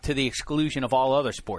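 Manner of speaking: ordinary talk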